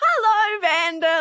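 gushing, overeager, shrill, very high-pitched over-friendly delivery. Retelling walking up to the awards night host, imitating way-too-friendly high hello. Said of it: "like way too friendly, way too high-pitched".

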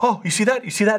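high-pitched, excited fan voice.

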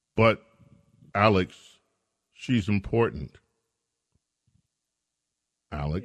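sarcastic protesting tone with feigned insistence. Replying to a caller who has just made a point: sarcastic. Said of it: "I understand your sarcasm".

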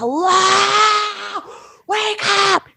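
very high screaming with the word hello drawn out. Recounting trying to rouse an unresponsive man: retelling yelling in his face. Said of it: "I'm like yelling in his face, like screaming".

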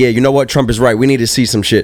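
ordinary delivery

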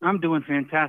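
winded speech, out of breath, catching breath. A caller on the phone line, after walking the neighborhood, greets the host: out of breath. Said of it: "If I sound a little out of breath".

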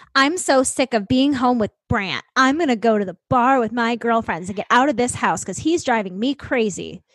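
put-on bitter, super spiteful, fed-up complaining. Imagining what a mayor's wife said before going out: imitating a spiteful wife. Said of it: "super spiteful and being like".

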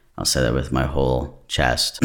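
low, serious voice from the full chest. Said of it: "My voice just felt like ten octaves lower".

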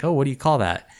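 put-on Australian accent. Retelling a cartoon scene, quoting a shop worker: imitating an Australian accent. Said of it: "in, like, an Australian accent's like".

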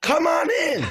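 high-pitched, shrill, loud yell. Retelling calling someone in through the door: imitating own scream. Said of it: "I scream".

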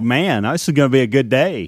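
ordinary delivery

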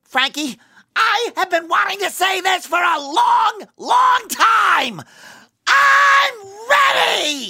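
super angry, furious, very high cartoon voice rant. Reading a line for Tom as if the character were super angry, SpongeBob voice. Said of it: "if SpongeBob were super angry".

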